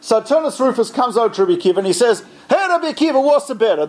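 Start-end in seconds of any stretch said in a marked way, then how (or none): 2.5-3.9 put-on Italian accent, pitched higher. Telling a story, voicing the Roman asking Rabbi Akiva a question: Turnus Rufus in Italian accent. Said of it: "I don't know if the ancient Romans had Italian accents or not".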